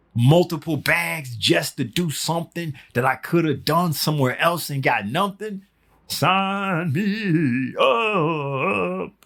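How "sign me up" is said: high, chirping little bird voice, drawn out upward. Reacting to an offer of free money and bags, bird-like voice. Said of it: "Bird like voice".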